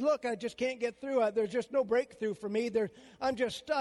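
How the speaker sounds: ordinary talk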